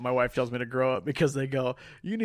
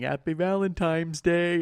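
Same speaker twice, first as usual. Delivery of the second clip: put-on play-acted drunken woman, repeated yelling; 4 semitones higher than usual. Retelling a tv scene where a drunk woman kept yelling: imitating a drunk woman yelling. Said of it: "she was all drunk and she just kept yelling".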